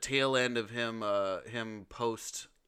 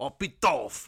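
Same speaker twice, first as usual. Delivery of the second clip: loud put-on French accent, "Pitoff" pronounced French; 3 semitones higher, 5 dB louder than usual. Asked to say a French auteur's name in a French accent. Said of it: "say Pitoff in your French accent?".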